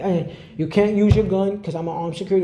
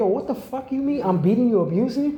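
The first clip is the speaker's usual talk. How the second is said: acted-out fury, mock-outraged disbelief, flipping out; 6 semitones higher than usual. Retelling being accused of abuse by her, flipping out. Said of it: "I'm flipping the fuck out".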